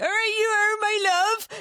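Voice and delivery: put-on Cornish accent.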